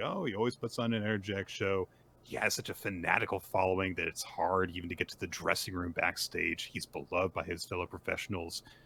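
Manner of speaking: usual speaking voice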